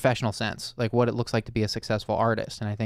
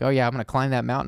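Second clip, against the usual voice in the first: fired-up, eager, motivated, can-do tone; 2 semitones higher than usual. Retelling the other speaker's reply after being handed the floor: imitating a motivated voice. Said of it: "I loved hearing the motivation in your voice".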